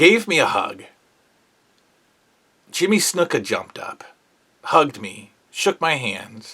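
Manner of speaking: touched, a bit emotional. Recalling being hugged by others in a restaurant, a little emotional. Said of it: "You get a little emotional".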